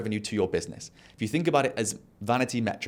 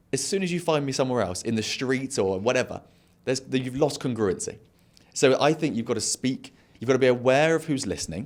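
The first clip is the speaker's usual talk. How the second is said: ordinary talk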